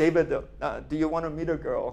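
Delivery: put-on speaking with a Korean accent. Retelling a phone call from his mother, in her Korean accent. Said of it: "She says in her Korean accent".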